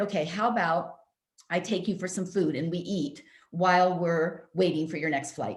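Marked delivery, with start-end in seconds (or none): none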